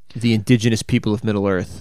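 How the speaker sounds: ordinary delivery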